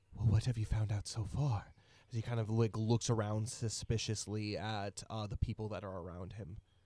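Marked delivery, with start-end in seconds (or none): 0.2-1.7 sudden, fast, serious and grave tone. Narrator voicing a man who leans in to ask the two listeners, suddenly serious. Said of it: "He gets immediately serious".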